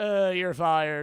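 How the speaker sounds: bad, loud, high voice. Acting out a scene in a bad Trump voice. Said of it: "I suck at doing the Trump voice".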